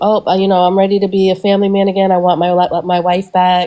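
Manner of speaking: ordinary talk, nothing marked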